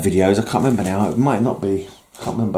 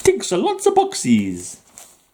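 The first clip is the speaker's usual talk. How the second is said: very high, swooping cockney accent attempting Italian; 12 semitones higher than usual. Repeating an earlier slip, the speaker sounds like an East End guy doing Italian. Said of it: "made it sound like a East End guy trying to do an Italian accent".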